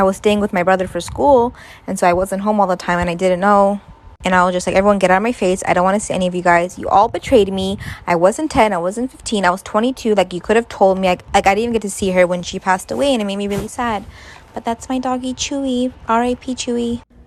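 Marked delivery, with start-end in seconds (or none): none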